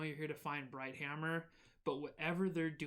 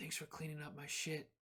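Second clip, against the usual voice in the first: hushed whisper, quieter; 6 dB quieter than usual. Voicing a character who pulls someone down to whisper thanks: whispering. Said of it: "pulls you down a little bit to whisper".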